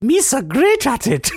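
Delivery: very high-pitched, very slow, drawn-out drawl. Answering a request to do a Jar Jar Binks voice: Jar Jar Binks voice. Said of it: "Do you think you could do a good Jar Jar".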